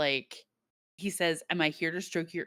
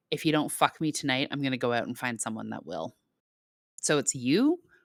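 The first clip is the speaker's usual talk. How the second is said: put-on impatient voice, lower; 4 semitones lower, 3 dB louder than usual. Retelling a scene where Shane demands a night together: imitating impatient Shane. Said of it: "so impatient".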